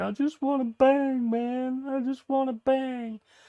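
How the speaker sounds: very high, weepy, slow, drawn-out crying. Retelling a fighter on the show who kept crying: imitating someone crying. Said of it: "Who just kept crying and going".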